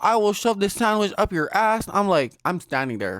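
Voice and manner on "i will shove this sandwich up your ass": put-on top-of-the-lungs angry scream, high and furious. Retelling how a customer screamed a threat at the counter: imitating a man screaming. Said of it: "screaming at the top of his lungs".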